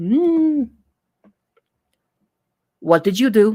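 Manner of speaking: put-on Russian accent, slipping into it. Reading a story, the narrator voices a woman questioning James; Russian accent. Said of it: "she keeps turning Russian".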